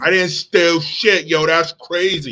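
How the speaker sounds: put-on street-tough New York thug accent. Repeating a woman's words from a clip: imitating a New York thug voice.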